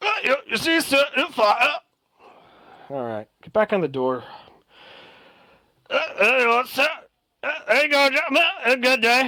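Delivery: very high, animated, swooping dwarf voice. Voicing a dwarf answering the elf at the table: voicing a dwarf. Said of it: "As the dwarf waves you all".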